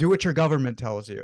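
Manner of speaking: put-on sarcastic, jabbing tone. Quoting a man who called everyone sheeple, imitating his sarcastic tone. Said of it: "he would say it very sarcastically".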